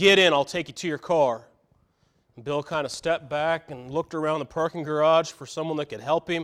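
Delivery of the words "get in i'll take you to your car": stern, no-nonsense tone. Storyteller voicing a man offering someone a ride to their car, stern. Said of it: "in a stern voice".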